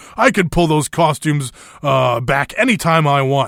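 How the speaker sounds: ordinary delivery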